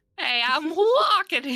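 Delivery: put-on very high, loud nasal shouting voice. Repeating a line after another speaker: nasally voice. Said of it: "it's hard to do the nasally voice".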